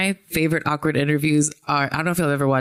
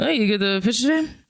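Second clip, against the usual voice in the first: high, awkward mumble, barely committing; 8 semitones higher than usual. Retelling a comedy bit at a baseball game, imitating Kyle Mooney mumbling. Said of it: "mumbling to baseball players".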